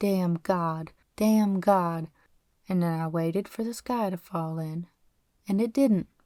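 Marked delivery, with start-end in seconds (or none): none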